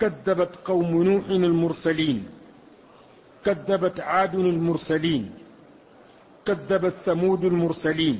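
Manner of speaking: plain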